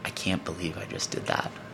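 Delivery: put-on mutter under breath. Retelling what Zara kept saying in the passenger seat on the drive down, muttering under breath. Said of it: "She's delivering under her breath".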